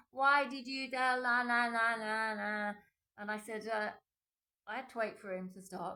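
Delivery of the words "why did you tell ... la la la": very loud, slow, drawn-out furious yell. Retelling an angry ex-boyfriend's phone call: imitating someone shouting. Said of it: "he was shouting, shouting, shouting".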